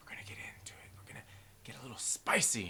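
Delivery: hushed, soft, teasing whisper.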